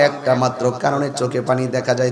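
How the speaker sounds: low, soft, tender voice.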